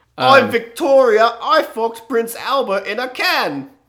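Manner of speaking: put-on Cockney accent, very high and loud. Trading British accents with a co-host, playing Queen Victoria: cockney Queen Victoria voice. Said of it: "you just gotta get cockney with all of them".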